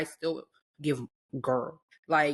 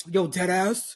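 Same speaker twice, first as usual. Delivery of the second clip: put-on tough, in-your-face, aggressive New York girl voice; 3 semitones higher, 4 dB louder than usual. Contrasting your own way of talking with new york girls, imitating aggressive new york girls. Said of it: "New York girlies when they be talking like".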